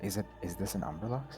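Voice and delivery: hushed voice. Asking whether the creature is an Umberlux, the speaker lowers their voice. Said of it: "and I lower my voice".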